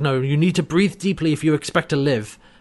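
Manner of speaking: ordinary talk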